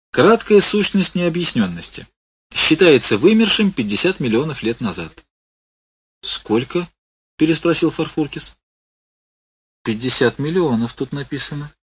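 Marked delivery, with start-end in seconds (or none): 9.9-11.8 timid, hesitant, quieter and slower. The commandant answers Farfurkis's question, timid. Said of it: "несмело сказал комендант".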